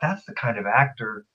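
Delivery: plain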